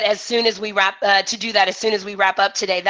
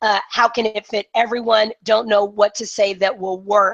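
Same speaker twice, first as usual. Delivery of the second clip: ordinary talk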